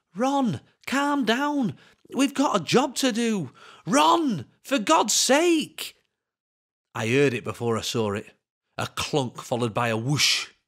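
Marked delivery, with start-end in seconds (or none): 0.2-6.0 very high, slow, drawn-out imploring pleading. As his companion dances around him, the narrator pleads with him, pleading. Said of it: "I pleaded with him".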